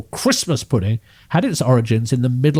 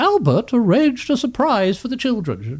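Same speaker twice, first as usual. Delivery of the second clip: very high-pitched royal lady's voice; 10 semitones higher than usual. Reading from a queen's journal aloud: Queen Victoria voice. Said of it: "that's my Queen Victoria".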